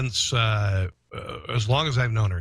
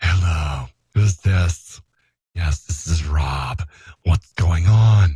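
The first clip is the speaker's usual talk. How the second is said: put-on phone voice, very low, deep, loud, slow; 7 semitones lower, 7 dB louder than usual. Speaker showing how they talk on the phone, in a special phone voice. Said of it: "this is how I talk on the phone".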